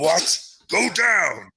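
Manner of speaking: high, surprised monster cry, full of disbelief. Voicing a surprised foe whose punch is held off: voicing Abomination. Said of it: "he's like".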